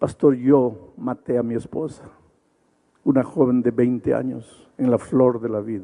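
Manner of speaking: ordinary talk, nothing marked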